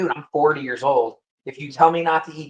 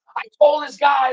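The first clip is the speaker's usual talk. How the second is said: put-on rowdy yell, higher and louder; 11 semitones higher, 5 dB louder than usual. Retelling what a bar worker said while getting rowdy: imitating someone yelling. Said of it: "starts getting, like, rowdy and yelling".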